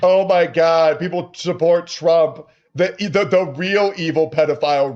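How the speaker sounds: put-on dopey dumb guy caricature voice. Criticizing others by repeating their words, in a mocking dumb guy voice. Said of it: "he's doing the dumb guy voice again".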